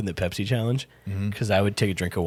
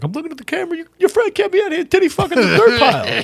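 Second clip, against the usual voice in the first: very high-pitched, loud Italian stooge voice; 7 dB louder than usual. Retelling what the manager said on the phone: imitating the manager, Italian stooge voice. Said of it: "very specific, uh, impression".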